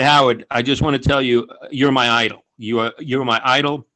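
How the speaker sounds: ordinary delivery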